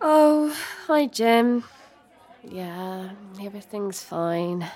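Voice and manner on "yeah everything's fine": low, hushed, very quiet, sorrowful voice. Asked in the morning if everything is okay, replying sad. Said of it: "The way you said that didn't sound fine at all. It sounded sad".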